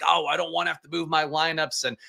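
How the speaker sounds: put-on curmudgeonly old man, New York accent. Imitating people in the chat who complain about moving lineups: curmudgeonly old new york man voice. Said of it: "a curmudgeon-y old New York man voice".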